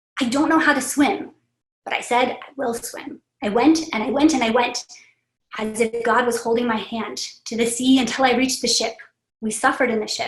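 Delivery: normal talking voice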